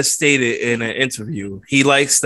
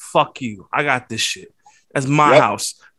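put-on sneering wrestler voice. Retelling a wrestler's taunt after a spine buster: sneering Powerhouse Hobbs imitation. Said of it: "he just had that sneer".

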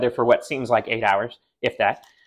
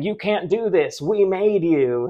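acted-out wild, high, drawn-out screaming; 7 semitones higher than usual. Retelling how the waitress runs into the crowd of trucks: imitating someone screaming. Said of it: "just starts screaming".

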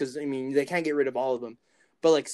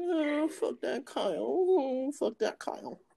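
very high, very slow, drawn-out weird voice; 11 semitones higher than usual. Imitating a friend's weird voice while talking on a podcast: imitating Zach's weird voice. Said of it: "that weird voice that he does".

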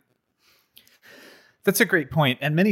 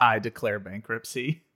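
ordinary talk

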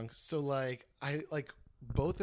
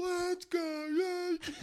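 put-on sloppy, very high, loud drunken scream. Speaker retells being very drunk in front of a Cleveland fan, retelling a drunk scream. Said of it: "I'm screaming like".

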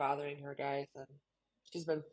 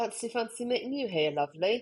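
put-on Kent/Essex English accent, high and loud; 7 semitones higher, 6 dB louder than usual. Practising an English accent while a co-speaker praises it, Kent/Essex accent. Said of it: "Honestly so good and so specific. It's really like Kent slash Essex".

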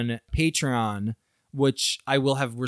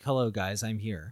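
put-on echoey god voice, lower and quieter; 4 semitones lower, 6 dB quieter than usual. Showing how an echoey voice of God would say hello: echoey voice of [name]. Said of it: "a little echoey voice".

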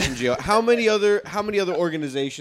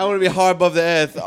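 put-on British man's accent, louder; 5 dB louder than usual. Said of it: "he's British, so fix your accent".

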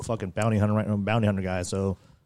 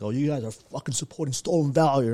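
mock ranting, yelling voice; 5 semitones higher than usual. Retelling a man at a pool table yelling at the group, retelling someone yelling. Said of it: "he's just yelling at all of us".

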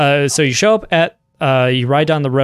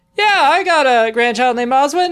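put-on bright, cheery, very high old-lady call; 13 semitones higher than usual. A narrator voices a woman calling back to another woman, cheery old woman shouting. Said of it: "a cheery old woman shouts out".

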